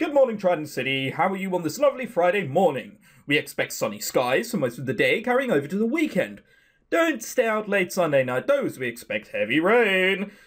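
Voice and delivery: fake American game show host patter. Voicing a host's morning announcement to the city, in a put-on american game show host voice. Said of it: "do we have to put on the American voice?".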